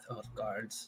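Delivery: muttering. Voicing a character who mutters about the guards: mumbling. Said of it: "I just mumble in my mouth".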